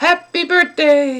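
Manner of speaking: excited and happy, high and loud. Explaining exclamation marks, showing a line that means you're excited: excited, happy voice. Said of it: "that means you're excited".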